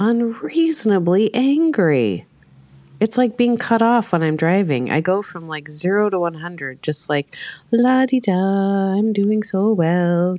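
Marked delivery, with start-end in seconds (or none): 7.7-10.4 unhurried, easy, pleasant, calm little voice. Retelling calmly talking to oneself while driving: imitating own nice little voice. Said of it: "talking to myself in a nice little voice".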